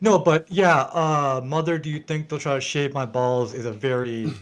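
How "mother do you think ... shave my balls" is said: usual speaking voice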